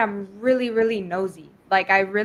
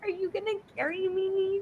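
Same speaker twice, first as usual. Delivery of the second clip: put-on crying voice, higher and quieter; 9 semitones higher, 9 dB quieter than usual. Retelling how she was crying to him in the finale: imitating Huda crying. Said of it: "crying to him".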